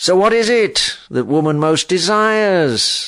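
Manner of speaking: high, mocking, derisive, jeering taunt. Reading a story aloud, the hag questions Arthur: jeering. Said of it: "she jeered".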